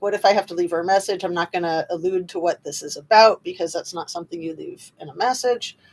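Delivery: ordinary delivery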